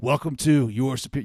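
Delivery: theatrical, dramatic, colorful show-opener delivery. Showing how to greet listeners in podcast mode, dramatic podcast intro. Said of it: "You gotta be like".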